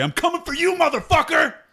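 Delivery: very high, rising, yelled battle cry. Voicing a character threatening Bortok in a fight: shouted threat in character. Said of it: "I look up at Bortok and I say".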